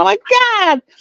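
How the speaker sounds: high, panicked, freaking-out voice.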